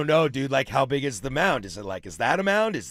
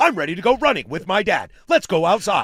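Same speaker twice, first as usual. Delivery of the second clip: put-on happy cartoon dog voice, higher and louder; 5 semitones higher, 6 dB louder than usual. Voicing a dog's thoughts, in the voice of the dog from Up. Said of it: "in the voice of the dog from Up".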